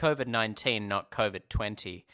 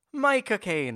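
put-on actor accent sounding Irish, higher pitch; 10 semitones higher, 4 dB louder than usual. Repeating the warm-up line after being shown: Michael Caine accent sounding Irish. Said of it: "Your Lucky Charms?".

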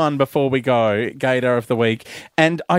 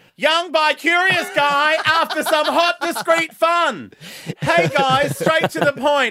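loud, shrill, high-pitched all-caps yelling; 13 semitones higher than usual. Reading an all-capitals online ad aloud as if yelling: shouting. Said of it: "So I will read it as if it's in capitals".

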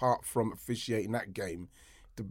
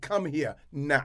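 put-on dismissive, curt, high-pitched voice; 5 semitones higher, 3 dB louder than usual. Retelling how a referee would talk to a player: imitating a referee's dismissive order. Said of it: "like this".

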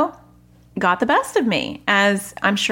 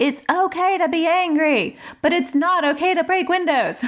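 put-on angry, high, raised shouting; 8 semitones higher than usual. The speaker re-enacts what she said when she was very angry, retelling a shout. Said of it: "So I shout".

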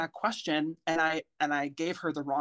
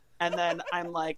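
ordinary talk

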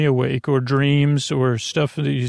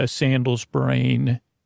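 ordinary delivery

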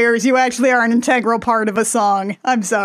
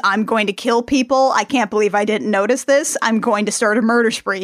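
normal talking voice

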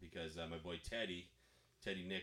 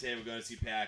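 plain

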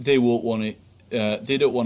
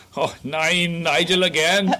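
put-on German accent, slow and high; 7 semitones higher, 3 dB louder than usual. Joking about calls from Nigel going unanswered: put-on German accent. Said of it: "That's my German accent".

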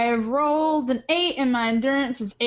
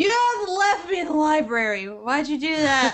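put-on sad, drunk-sounding character voice; 3 semitones higher than usual. Playing a drunk character left behind by the group: sad drunk character voice. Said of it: "Aludra kinda sits down and looks really sad".

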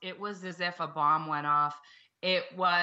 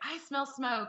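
put-on, hollered, high-pitched scream; 7 semitones higher, 5 dB quieter than usual. Recounting the moment after hanging up a Facebook Live stream, retelling own scream. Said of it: "I hung up and I screamed".

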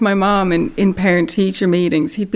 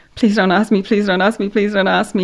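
put-on nervous, anxious pleading voice. Retelling sitting in class dreading a question: imitating own nervous pleading. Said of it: "sit there going bright red and just being like".

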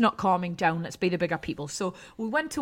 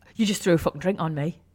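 usual speaking voice

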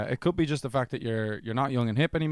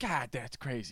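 put-on soft, baffled, perplexed old man voice, New York accent; 8 dB quieter than usual. Retelling a man perplexed by SpongeBob, in an old New York dad voice. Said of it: "he's some old New York dad".

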